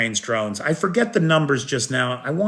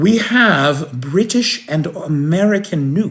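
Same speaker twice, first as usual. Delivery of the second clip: put-on very posh, plummy upper-class British accent, slow. Reading out what an anonymous angel said, in a very posh British accent. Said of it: "probably a very posh accent".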